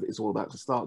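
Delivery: ordinary talk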